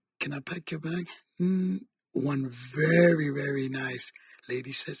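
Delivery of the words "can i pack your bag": very shy, hesitant, timid and soft voice. Retelling asking a shopper to pack their bag: imitating asking timidly. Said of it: "I asked very, very timidly".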